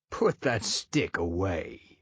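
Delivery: deep, throaty, guttural wolf voice. Narrating a story, the immortal big bad wolf addresses the narrator: guttural and deep. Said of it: "The wolf's voice, guttural and deep".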